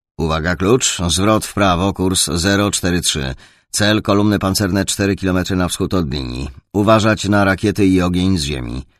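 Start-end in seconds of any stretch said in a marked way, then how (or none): none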